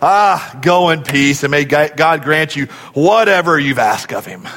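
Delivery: put-on crusty, gruff old priest voice. Retelling a bible scene, the speaker voices the priest's reply to a weeping woman: old, crusty priest voice. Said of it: "I can almost hear it as an old, crusty priest".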